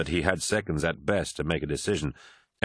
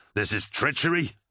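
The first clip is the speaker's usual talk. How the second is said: high-pitched, loud, forceful battle-cry shout; 6 semitones higher than usual. Narrator reading a pilot answering another character's question, shouting. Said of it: "shouted Tarvitz".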